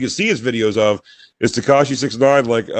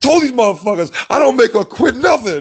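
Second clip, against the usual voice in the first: very high-pitched, enraged, furious insistent voice; 11 semitones higher than usual. Retelling a man pacing in the back: imitating a furious man. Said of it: "He's just in the back, furious".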